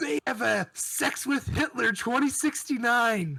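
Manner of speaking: overexcited, high, loud and very drawn out. Announcing a find to the other speakers: way too excited. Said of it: "You got way too excited".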